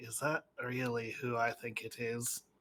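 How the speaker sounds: very soft, low, hushed half-whisper. Player's character looks over at Gildea and asks her; half-whispering. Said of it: "just kind of whisper to her and say".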